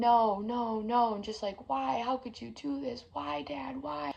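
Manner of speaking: sobbing, desperate hysterical crying. Retelling finding a father on his bed: retelling own hysterical crying. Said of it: "hysterically crying".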